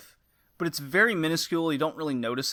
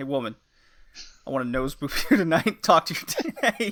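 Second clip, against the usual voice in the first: speaking while laughing through the words; 4 dB louder than usual. Acting out a friend's joke line, laughing while talking. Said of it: "I can't even say it without laughing".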